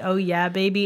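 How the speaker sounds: put-on, mock sexy voice. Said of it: "in a sexy way".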